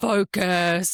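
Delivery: acted-out loud one-word yell, like a teacher. Retelling being yelled at to focus mid-run: imitating Matt's loud yell. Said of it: "like this, like, really loud".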